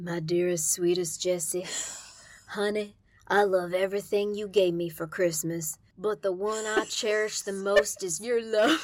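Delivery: creepy low male voice. Showing the other speaker a voice done on command, creepy dude voice. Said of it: "you just got that creepy, like, factor down".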